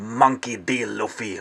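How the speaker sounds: scary, cocky, menacing tone. Retelling a line from a scene, imitating Nico Robin's scary cocky tone. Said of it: "in some sort of a voice, like, trying to be scary, trying to be cocky".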